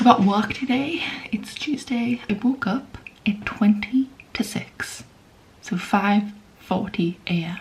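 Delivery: whispering a little, quiet. Speaker addressing viewers at 6:30 in the morning, whispering a little. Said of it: "I'm having to whisper a little bit".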